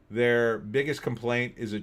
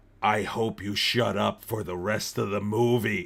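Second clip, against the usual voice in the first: acted, slow, mildly menacing, threatening tone; 3 semitones lower than usual. Retelling warning loud teenagers at the movies, acting out a threatening warning. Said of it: "Like really in like a threatening voice".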